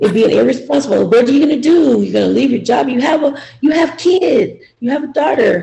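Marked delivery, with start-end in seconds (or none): 1.1-5.6 worried scolding tone. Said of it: "that's the way she looked at it".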